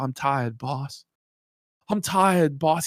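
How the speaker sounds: depressed, completely worn out, defeated tone. Retelling how someone kept repeating a complaint: imitating Jer sounding depressed and tired. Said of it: "just completely depressed and defeated and tired".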